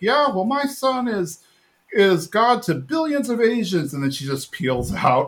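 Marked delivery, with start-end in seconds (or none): 0.0-3.9 deliberate acted-out shout, high and drawn-out. Retelling how a mother pulled up beside another driver, retelling a yell. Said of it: "yells at the woman like".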